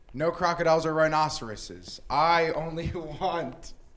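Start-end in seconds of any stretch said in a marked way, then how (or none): 2.1-3.7 slow, words broken by laughter, giggling. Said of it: "Excuse me for laughing".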